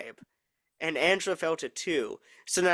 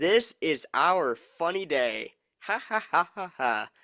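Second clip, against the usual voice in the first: mock creepy laugh, slower. Retelling what a man said instead of saying morning back: imitating creepy laughter. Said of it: "He says".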